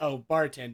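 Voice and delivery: ordinary talk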